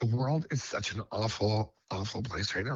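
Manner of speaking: getting emotional, heartfelt delivery. Asked what inspired the track, the guest answers the host: emotional. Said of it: "I'm sorry to get emotional".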